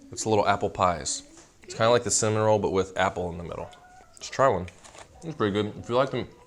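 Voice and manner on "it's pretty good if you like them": speaking while chewing, mouth full of food. Trying a little apple pie and recommending it, talking with mouth full. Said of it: "stop talking with food in my mouth".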